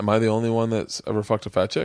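ordinary talk

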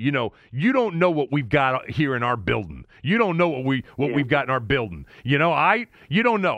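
put-on South Jersey Philly accent. Quoting a man talking about his team's players: imitating a Philadelphia accent. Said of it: "he's talking in that Philadelphia accent".

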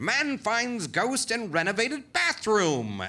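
put-on very high, old-fashioned, old-timey voice. Describing newspaper articles, quoting a headline in an old-timey voice. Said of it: "but I'm gonna stick with it".

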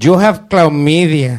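put-on Mexican accent. A performer introduced to a crowd does his impersonation of a Mexican STD doctor. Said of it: "my impersonation of a Mexican STD doctor".

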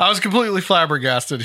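ordinary delivery

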